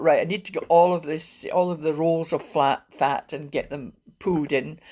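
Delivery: plain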